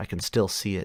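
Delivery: plain reading voice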